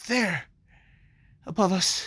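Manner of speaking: put-on breathlessness. Acting out a character stopping between two kiosks: acted panting. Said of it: "like, panting".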